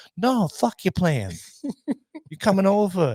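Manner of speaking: high, swooping, drawn-out, insistent voice. Retelling a funny commercial, answer the neighbor who says he has plans, impression of Mike. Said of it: "that's a great impression of Mike".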